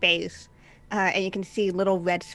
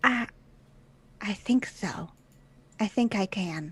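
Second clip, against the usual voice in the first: small, tiny voice. During a roleplaying game, a player speaks as their character: small voice. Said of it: "that same uh, small voice".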